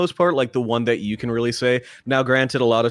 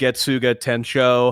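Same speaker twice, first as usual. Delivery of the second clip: normal talking voice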